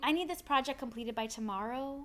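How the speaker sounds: "tomorrow" lifted with a rising, question-like lilt. Giving a project deadline, showing a questiony rise on tomorrow. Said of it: "that questiony sound of tomorrow is an upward inflection".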